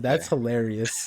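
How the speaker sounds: talking through laughter. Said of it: "I'm laughing too hard".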